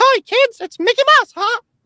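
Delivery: very high-pitched and loud. Showing how they do a cartoon voice: high-pitched Mickey Mouse voice. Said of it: "the high pitch".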